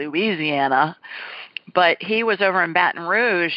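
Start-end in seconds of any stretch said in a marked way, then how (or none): 0.0-1.0 put-on "Louisiana" pronounced in a northern US accent. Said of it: "When I was a Yankee, I'd call it".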